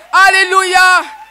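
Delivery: loud, shouted, belted-out delivery.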